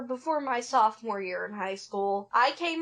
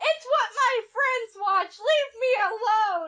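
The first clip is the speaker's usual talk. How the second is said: put-on very high, flustered blurted yell; 9 semitones higher, 4 dB louder than usual. Retelling being caught by dad watching ponies: imitating own flustered yell. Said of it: "with my flustered face, I yelled".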